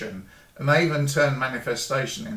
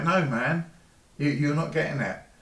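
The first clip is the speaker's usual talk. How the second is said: flat, humorless, stone-faced deadpan delivery; 3 semitones higher than usual. Retelling a reply from an upline in the MLM: imitating a stone-faced reply. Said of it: "stone-faced response".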